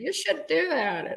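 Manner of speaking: frantic, panicky little robot voice, very high pitched. Describing a scene where droids get kicked, voicing the little droid: panicky little droid voice. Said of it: "the little droid starts panicking".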